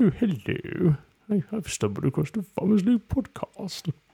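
put-on very high, posh little boy voice. Imagining a Chelsea listener coming across the Farmers League podcast, posh little boy voice. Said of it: "Some little posh boy".

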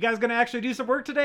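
put-on thick, laid-on Aussie accent. Retelling a first victim's line in the film: imitating a thick australian accent. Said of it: "It is the most Australian accent".

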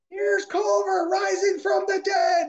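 play-acted shrieking, very high screaming yell. Recalling someone's memorable lines while passing cars in a race, retelling a yell. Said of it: "I remember him yelling and screaming".

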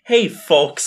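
put-on obnoxious tone. Retelling how they used to ask friends for rides: imitating own obnoxious request. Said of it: "in the most, like, obnoxious way possible".

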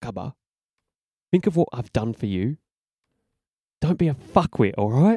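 hushed, soft half-whispered words. Holding him up by the floaty, half-whispering in his ear: half-whispering. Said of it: "I whisper in his ear".

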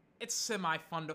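plain

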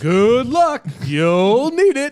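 high arcade game show announcer voice. Explaining where their new business voice comes from, the speaker does the Smash TV announcer voice. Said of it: "what I'm mimicking with my new business voice".

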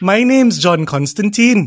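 put-on Northern English accent. Friends discuss Taron Egerton playing Constantine; John Constantine voice, Northern accent. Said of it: "so not a Welsh accent?".

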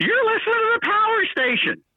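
high-pitched geeky radio-liner voice. Describing a radio station promo, the speaker imitates the guy: nerdy voice. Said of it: "we took this guy's real nerdy voice".

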